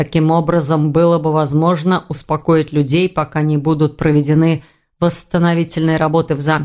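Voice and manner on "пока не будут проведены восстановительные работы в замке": ordinary delivery, nothing marked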